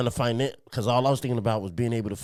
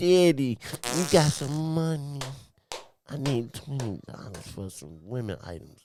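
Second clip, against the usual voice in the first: put-on cutesy baby-talk voice; 3 semitones higher than usual. Retelling a woman's phone call to him, in her put-on baby voice. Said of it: "finna put on this baby voice".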